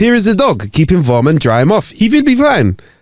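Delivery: put-on German accent. Retelling what a tourist said after saving the speaker's dog, German accent. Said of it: "Sorry about the German accent".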